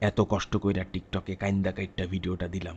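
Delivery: low, flat, soft, sad lamenting tone.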